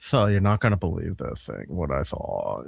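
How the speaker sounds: very hushed, deep, creaky voice with lisp. Impersonating a guy with an iphone reporting what he overheard, with lisp and vocal fry. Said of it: "how do you have the lisp and vocal fry at the same time".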